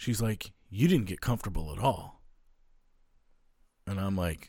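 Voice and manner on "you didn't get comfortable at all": acted, flustered and cross, mad outburst. Retelling what a woman said on coming back in: imitating someone flustered and mad. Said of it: "she gets, like, all flustered and mad".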